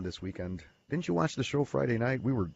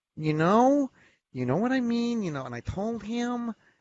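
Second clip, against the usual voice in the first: mocking whiny nasal voice, much higher pitch; 13 semitones higher, 4 dB louder than usual. Mimicking a girl from a Chicago Heights bar, imitating a whiny nasal voice. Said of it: "she would always talk like this".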